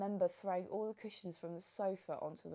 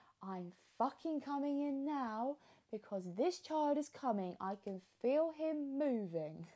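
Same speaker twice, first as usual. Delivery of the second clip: play-acted, high, frantic screaming; 6 semitones higher than usual. Recounting what they screamed at the birthing centre over loudspeaker, retelling a scream. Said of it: "And I just screamed".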